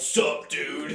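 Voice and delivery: mocking imitated voice. Mocking how girls greet people now: imitating girls saying sup dude. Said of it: "but now girls like".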